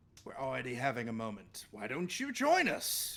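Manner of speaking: openly mocking, sarcastic, swooping sing-song tone. Answering a character's request for a moment of time: sarcastic. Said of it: "Kind of, like, sarcastically".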